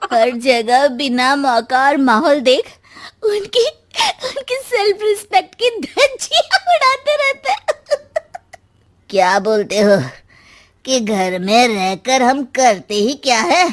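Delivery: tipsy, fed-up, accusing, ranting voice. After drinking with her mother-in-law, a wife confronts the husbands, drunk and shouting. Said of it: "वो मुस्कुराकर सास के कान में कुछ कहती है और दोनों पीना शुरू करती हैं। कुछ देर बाद दोनों चिल्लाते हुए अपने अपने पतियों को ढूंढने लगती है। / वो मुस्कुराकर सास के कान में कुछ कहती है और दोनों पीना शुरू क".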